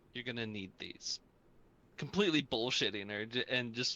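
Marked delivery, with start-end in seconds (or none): 0.1-1.2 grave, serious, solemn delivery. Handing a character two chocolate coins in character: solemn. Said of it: "just very sol-, solemnly say to her".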